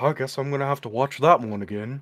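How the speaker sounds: soft acted voice. Recalling a remark their dad would always make, imitating their dad. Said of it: "I love your dad impersonation".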